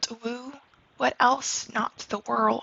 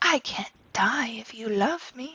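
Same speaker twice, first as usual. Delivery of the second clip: put-on lovey-dovey lover voice. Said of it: "Romeo's just talking in, like, you know, lovey-dovey".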